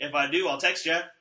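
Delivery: mock sarcastic tone. Retelling a reply at the bank about a lost phone: retelling a sarcastic reply. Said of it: "Which is sarcastic".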